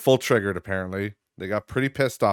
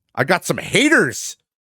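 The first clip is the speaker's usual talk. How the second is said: very loud, high, drawn-out yell; 10 semitones higher, 5 dB louder than usual. Announcing big news to listeners, leaning in on the mic: too loud. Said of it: "I was too loud".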